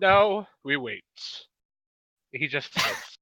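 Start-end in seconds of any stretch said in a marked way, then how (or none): 0.0-1.0 very loud, booming, drawn-out, sophisticated refined voice. Playing a pipe-smoking character settling in to wait: most sophisticated voice. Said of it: "he says in the most sophisticated voice he can".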